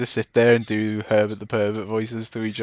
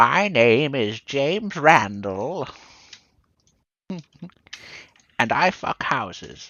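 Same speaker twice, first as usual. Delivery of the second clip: put-on elderly man character voice; 3 semitones higher than usual. Describing a comedian's old-man character, the speaker imitates him; James Randall old man voice. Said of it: "he role plays as an old man".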